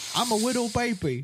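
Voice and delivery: very high, over-the-top, exaggerated put-on comic voice. Mocking a comedian's joke voice, in an Adam Sandler comic voice. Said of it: "He does that fucking voice every time that he's doing a joke".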